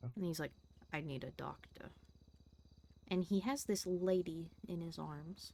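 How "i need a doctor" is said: very quiet, hushed, tense, stressed voice. Retelling how Joey came in holding a lady: imitating Joey talking quietly. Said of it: "he talks very quietly".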